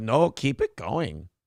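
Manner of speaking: slips into a put-on Mexican accent. Quoting what people are saying about the funding: put-on mexican accent. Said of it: "your accent went, uh, kind of, like, Mexican there".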